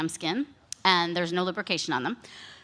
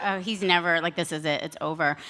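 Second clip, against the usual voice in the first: ordinary talk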